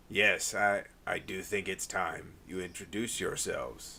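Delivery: rough, low, gruff voice. Voicing an unseen speaker telling the two of you to introduce yourselves: gruff voice. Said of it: "you hear one gruff voice say".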